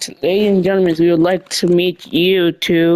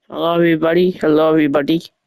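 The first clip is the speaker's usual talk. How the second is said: put-on Swedish accent. Announcing a draft pick as the Nashville Predators player, in a fake Swedish accent. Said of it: "Sorry if I'm talking like this. I'm I'm Sweden".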